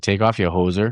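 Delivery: joke put-on Canadian accent. Recalling joking around at tailgates with friends, doing the Canadian accent. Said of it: "I would always do the Canadian accent".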